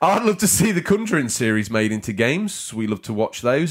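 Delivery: plain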